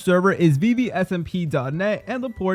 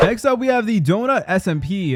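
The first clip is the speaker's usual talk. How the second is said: ordinary talk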